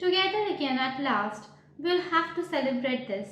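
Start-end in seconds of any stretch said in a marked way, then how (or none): none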